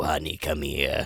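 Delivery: low, gruff, worn-out speaking voice. Imitating how the brother in the movie talks: Mrs. Doubtfire brother voice. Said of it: "Robin Williams brother in that, this is how he talks".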